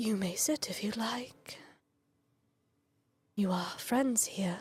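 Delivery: nearly whispering, struggling to get words out, soft. Game master voicing a highness who finds it difficult to speak, in a soft whispery voice. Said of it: "it's a very soft voice, like he's whispering".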